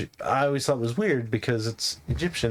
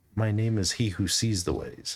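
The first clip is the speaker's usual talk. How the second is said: voice dropped down low; 2 semitones lower than usual. Retelling how he gave his name after saying he could do it too, lowered voice. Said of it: "He actually kind of lowers his voice".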